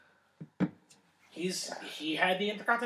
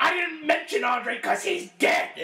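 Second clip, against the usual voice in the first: loud, high-pitched, slow yell. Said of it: "But him yelling at the fan, going".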